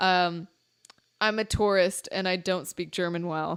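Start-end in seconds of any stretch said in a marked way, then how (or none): none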